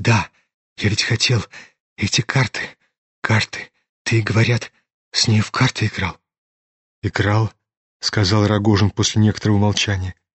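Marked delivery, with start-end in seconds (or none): 0.0-6.2 eager, anxious, agitated whisper. The prince, suddenly half-rising on the bed, in an agitated hurried whisper. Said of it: "зашептал вдруг князь прежним взволнованным и торопливым шепотом".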